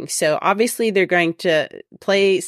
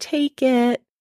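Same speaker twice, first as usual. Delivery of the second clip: put-on tiny, high small-child voice; 7 semitones higher than usual. Recalling the toddlers handing over their cups, repeating their words: little toddler voice. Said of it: "in their little toddler voice".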